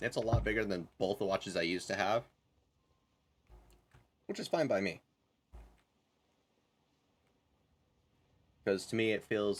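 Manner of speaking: speaking while chewing, mouth full. Talking about a new watch with candy in mouth: talking with candy in mouth. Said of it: "I've got Starburst in my mouth".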